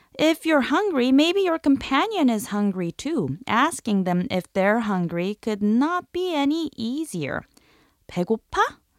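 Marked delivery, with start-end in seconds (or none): 8.1-8.7 questioning rising tune on 배고파. Teaching how to ask if someone is hungry: rise at the end of 배고파. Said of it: "It's all in the intonation. Just raise the end of the phrase to turn it into a question".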